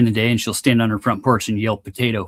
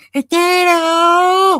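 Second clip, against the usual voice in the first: put-on old lady voice, screaming; 6 dB louder than usual. Imitating the potato lady yelling from her porch for two hours: imitating her screaming. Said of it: "what does she sound like when she's screaming potato".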